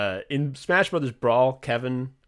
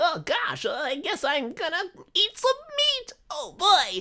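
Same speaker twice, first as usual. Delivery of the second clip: very high, swooping, overdone cartoon cutesy voice. Criticizing a game character's voice acting: mock cutesy cartoon cat-girl voice. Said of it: "kind of voice".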